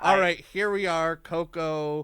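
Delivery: mock anglicized Spanish pronunciation.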